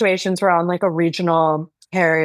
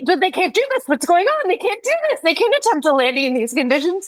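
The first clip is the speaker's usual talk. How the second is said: agitated, worked-up, very high, insistent voice; 11 semitones higher than usual. Retelling her husband's reaction on a turbulent flight, imitating her worked-up husband. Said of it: "my husband gets so worked up about it".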